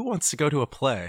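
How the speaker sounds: very loud, high-pitched motherly call-out. Retelling how a cousin imitated the family's mom: imitating his mom. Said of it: "his impression of my mom was always".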